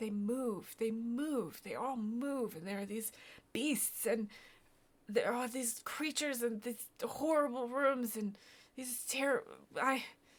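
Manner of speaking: high, frightened, emotional outpouring, fear welling, breaking off. Voicing a survivor describing the shifting rooms and beasts: getting emotional, fearful. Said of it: "he's starting to get emotional".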